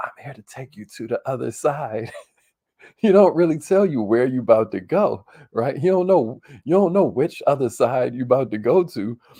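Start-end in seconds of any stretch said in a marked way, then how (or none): 0.0-2.1 soft, hushed whisper under the breath. In a comedy bit, the Grim Reaper at your door whispers to you. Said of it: "he whispers to you".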